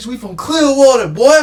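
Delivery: yelling. Retelling a street argument after a fight: imitating own yelling. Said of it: "I was yelling".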